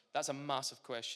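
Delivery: ordinary talk, nothing marked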